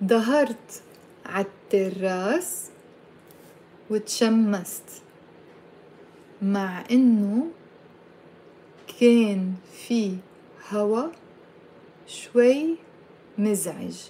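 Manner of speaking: slow, halting teacher-like pace in small chunks. Repeating a long arabic sentence for listeners to say along, said slowly. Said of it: "I'll say it slowly".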